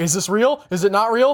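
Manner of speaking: normal talking voice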